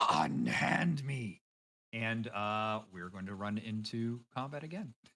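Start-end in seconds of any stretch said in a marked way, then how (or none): 0.0-1.4 loud, furious, outraged, very angry voice. Narrating to the players, voicing an unseen speaker who objects, very angry voice. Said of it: "you hear uh a very angry voice say".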